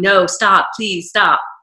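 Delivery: imitated crying woman's voice. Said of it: "she was, like, crying".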